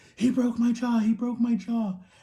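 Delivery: acted, high, wailing, pained crying scream. Speaker retelling when their jaw was broken, reenacting crying and screaming. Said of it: "I'm like crying and I'm screaming".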